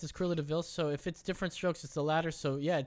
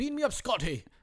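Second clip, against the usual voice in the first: put-on high-pitched Scottish accent; 7 semitones higher, 3 dB louder than usual. Saying how people misquote the line, in a Scottish accent. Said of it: "They also say it like in a Scottish accent".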